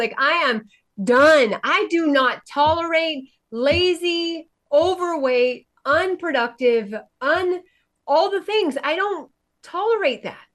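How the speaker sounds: high, fervent, passionate, lazily drawn out. Speaking to the audience, passionate. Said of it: "you should feel the passion in my soul, in my voice".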